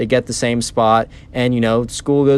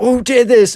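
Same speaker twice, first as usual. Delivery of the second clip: put-on whimpering child crying voice, much higher, louder; 7 dB louder than usual. Retelling a Minecraft story, the speaker imitates the shocked kid, crying and whimpery. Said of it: "a crying, whimpery voice of like".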